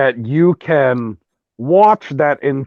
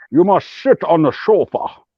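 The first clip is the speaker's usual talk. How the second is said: monotone voice with s sounds slurred to sh; 2 semitones higher than usual. Showing how to do the accent by adding H to S, Sean Connery impression. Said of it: "That's how you're supposed to say it".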